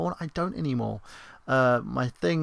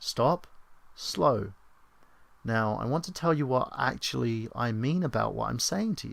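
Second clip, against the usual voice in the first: mock condescending, over-explaining, patronizing tone; 3 dB quieter than usual. Retelling calming someone offended, imitating own patronizing tone. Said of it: "I'll be like".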